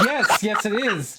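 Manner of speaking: put-on very slow, high, delighted and flattered. Retelling how he answered her sarcastic curtsy: imitating him sounding very happy. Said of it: "very happy that you showed him respect".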